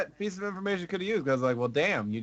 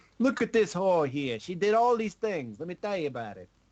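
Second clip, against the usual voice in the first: put-on Brooklyn accent, pitched up; 6 semitones higher than usual. Guessing at a game story, voicing a guy with a Brooklyn accent. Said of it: "a guy with a Brooklyn accent going".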